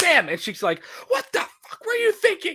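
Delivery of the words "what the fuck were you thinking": sudden full-on angry snap, very high. Retelling the moment the mother snaps: imitating someone snapping in anger. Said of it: "she just snaps and goes, like, full on".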